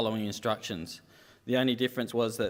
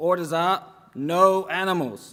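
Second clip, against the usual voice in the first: bad put-on American accent, loud and slow; 7 semitones higher, 7 dB louder than usual. Retelling a story, voicing the soldier's reply to the woman, in a bad American accent. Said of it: "It's not a very good American accent".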